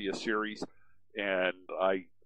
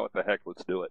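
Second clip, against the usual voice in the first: plain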